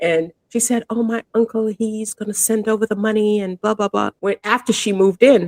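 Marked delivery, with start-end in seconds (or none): 0.9-4.1 put-on light British accent, higher. Retelling what a tenant said about her uncle: imitating a slight british accent. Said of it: "she spoke with a little British accent".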